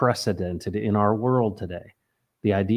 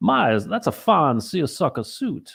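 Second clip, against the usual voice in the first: put-on buttery, silky Southern accent, pitched up; 7 semitones higher than usual. Plugging Forrest's Sunday show, imitating his buttery, smooth Southern voice. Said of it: "buttery, smooth Southern voice".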